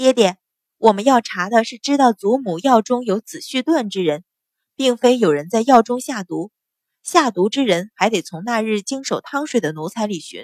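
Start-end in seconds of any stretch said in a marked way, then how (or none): none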